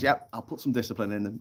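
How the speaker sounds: usual speaking voice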